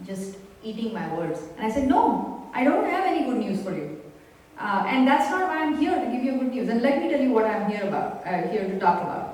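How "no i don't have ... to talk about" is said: ordinary talk, nothing marked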